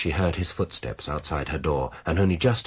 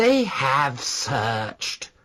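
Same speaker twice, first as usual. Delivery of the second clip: high-pitched, angry, fuming; 8 semitones higher than usual. Reading fiction aloud, voicing a character's curt reply: fuming. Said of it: "fumed Harry".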